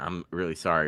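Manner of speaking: put-on upset voice. Retelling an apology after accidentally hitting a friend with a door: imitating an upset apology. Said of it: "I was, like, super, like, upset".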